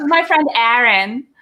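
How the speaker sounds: put-on Long Island accent. Imitating a friend who grew up on Long Island, put-on Long Island accent. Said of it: "she still kind of gets into that".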